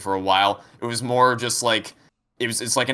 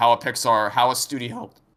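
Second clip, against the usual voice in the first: voice cracking, much slower. Discussing a disappointing movie sequel mid-rant, voice cracking. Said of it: "voice crack".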